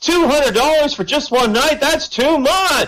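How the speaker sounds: mock, very high, loud, carrying blurt. Telling a joke about a guy answering a girl's whisper: retelling a loud reply. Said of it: "the guy responds in a loud voice".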